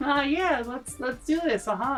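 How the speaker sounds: high-pitched, squeaky put-on voice. Imitating a woman who always talked this way, in a high squeaky voice. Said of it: "She'd have a high high squeaky voice all the time, and she'd be like".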